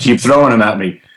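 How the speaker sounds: plain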